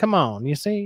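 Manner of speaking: put-on old-time gangster voice with menace. Discussing a character's voice, the speaker demonstrates it in a Dick Tracy-style gangster voice. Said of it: "It's almost a Dick Tracy, like you see".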